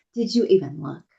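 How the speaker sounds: mock accusing, judgmental, pointed tone. Retelling what the speaker says to the husband: imitating own judgmental tone. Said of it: "I give judgment".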